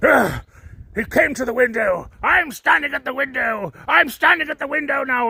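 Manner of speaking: derisive, taunting, mocking high-pitched voice. Retelling how he reacted at the window: mocking imitation of him. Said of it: "He's like".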